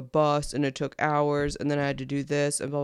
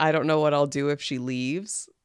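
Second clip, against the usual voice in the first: normal talking voice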